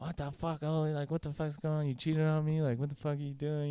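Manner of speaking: mock high, flipping-out rant. Retelling how a girlfriend reacted to the cheating: imitating girlfriend flipping out. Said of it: "just fucking flipping out".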